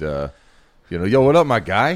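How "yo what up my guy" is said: put-on very loud, high-pitched New York accent. Speaker shows how they talk on getting home, put-on New York accent. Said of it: "I do go home and immediately just".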